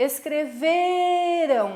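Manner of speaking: shouted, ve in escreveram stressed and drawn out. Shouting escreveram to show the tonic syllable in Portuguese, shouted, stretching the 've'. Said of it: "Se eu vou gritar a palavra escreveram, como é que eu vou dizer? ... Estão vendo que eu puxo no V?".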